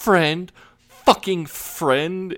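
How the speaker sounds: mock very high, wound-up, unhinged raving. Retelling Jay jumping on the car roof: imitating Jay going off the deep end. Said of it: "he is just is going off the deep end".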